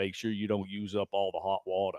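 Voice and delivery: put-on strong, laid-on Southern accent, soft-spoken and quiet. Telling a baseball story, the speaker quotes what Grady said, in Grady's strong Southern accent. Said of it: "strong Southern accent".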